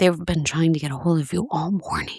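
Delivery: mock whispering. Retelling what someone told the speaker: imitating someone whispering. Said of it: "Why is she whispering?".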